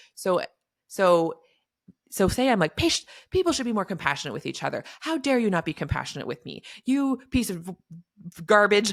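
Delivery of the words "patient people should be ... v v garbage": put-on indignant, heated scolding tone without real volume. Acting out yelling at a patient about compassion: imitating someone yelling. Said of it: "now I'm yelling at them".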